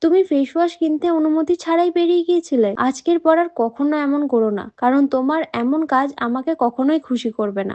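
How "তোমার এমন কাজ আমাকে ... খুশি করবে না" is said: ordinary delivery, nothing marked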